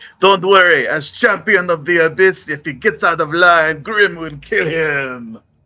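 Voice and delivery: loud, booming delivery.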